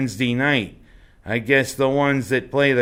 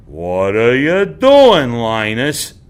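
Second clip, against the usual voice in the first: slow, loud, drawn-out, swooping delivery; 7 dB louder than usual. Imitating Sally asking Linus a question, sounding like John Wayne. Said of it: "doesn't she sound like the Duke there".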